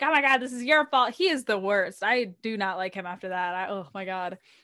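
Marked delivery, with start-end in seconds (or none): 0.0-1.1 put-on screaming outburst. Retelling how a character started screaming at others after an attack: imitating someone screaming. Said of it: "starts screaming at them".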